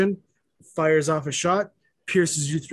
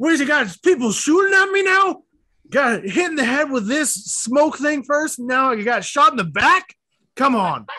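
mock shrill, very high, very loud yelled complaining tone; 10 semitones higher, 5 dB louder than usual. Retelling what someone shouted after getting shot in the back: retelling a shout. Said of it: "lets out a shout and is like".

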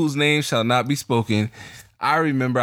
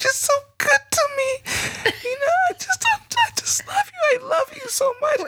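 very high, weepy, put-on sobbing crying voice. Retelling what a crying partner said after dinner: imitating someone crying. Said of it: "the bitch starts crying".

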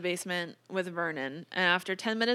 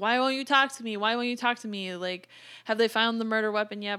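play-acted, repeated yelling; 3 semitones higher, 4 dB louder than usual. Retelling how he yelled at someone sitting silently: imitating someone yelling. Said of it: "he'd start yelling at him".

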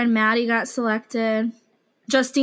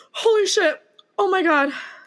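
high, drawn-out crying, weeping through the words; 8 semitones higher than usual. Overwhelmed after finally getting it, crying. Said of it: "I'm literally fucking crying".

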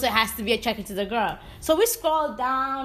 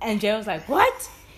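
usual speaking voice

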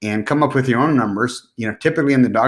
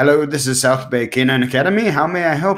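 put-on lovely British accent; 3 semitones higher than usual. Retelling how an old british woman answered the phone: imitating a british accent. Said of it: "with her lovely British accent".

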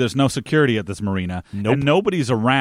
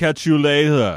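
put-on voice of someone learning to speak.

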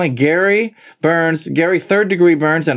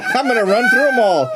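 small, held-in, mild put-on yell; 5 semitones higher than usual. Retelling how a little guy in the corner starts yelling: imitating someone yelling. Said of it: "He starts yelling".

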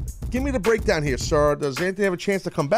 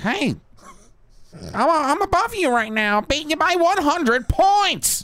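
put-on crazy disgruntled man voice, pitched much higher; 10 semitones higher, 4 dB louder than usual. Imagining what Seth would say when ahead by points, Seth's crazy disgruntled-man voice. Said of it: "crazy, disgruntled man at OTB".

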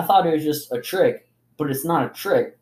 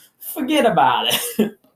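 fake Italian accent, higher pitch; 6 semitones higher, 4 dB louder than usual. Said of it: "I was talking like an Italian".

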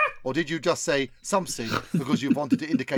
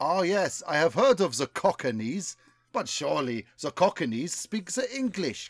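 heavy put-on German accent; 2 semitones higher than usual. Acting a scene, one character replies about the cockneys, in a full german accent. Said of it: "I want full accent action".

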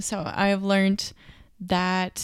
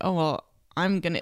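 mock sassy, passive-aggressive tone. Retelling a girl's remark about ordering a full meal: imitating a passive-aggressive remark. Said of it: "kinda just passive aggressively being like".

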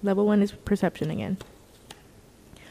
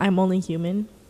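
plain

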